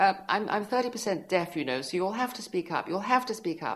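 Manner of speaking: very high, loud, snooty voice. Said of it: "annoying lemon-up-the-ass woman".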